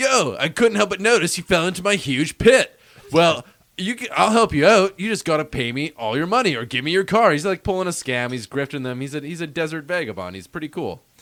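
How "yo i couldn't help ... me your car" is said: loud, pitched-up surfer dude holler. Retelling a movie scene where Yamcha offers help from the pit: Yamcha surfer dude voice. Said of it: "So he's like a surfer dude".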